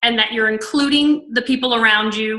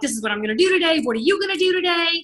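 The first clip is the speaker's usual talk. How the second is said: mock gushing, super excited, fast, rising enthusiasm; 6 semitones higher, 3 dB quieter than usual. Showing how you phone a team member in the morning, retelling your own excited talk. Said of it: "she feels that I'm like super excited".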